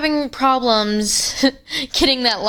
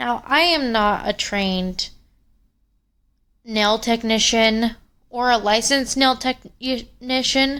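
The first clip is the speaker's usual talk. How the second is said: stuttering, stumbling delivery, tripping over the words. Explaining what they are doing to a nail, stuttering. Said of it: "I'm stuttering".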